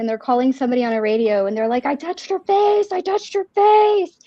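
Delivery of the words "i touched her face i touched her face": play-acted, high-pitched screaming and sobbing cry. Retelling a cop screaming and crying into a radio, imitating someone screaming and crying. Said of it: "like screaming and just like crying".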